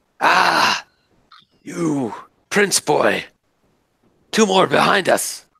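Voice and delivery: high, raspy, rough hiss. A game narrator voicing Taruko addressing Prince Boy, Taruko hissing. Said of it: "he hisses".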